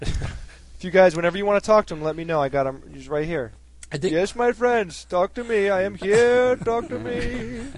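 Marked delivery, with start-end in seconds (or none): 4.0-7.6 cheesy, exaggerated Indian accent, pitched up. Speaker claims to channel Buddha for the others, cheesy Indian accent as Buddha. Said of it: "You just speak English with a cheesy Indian accent".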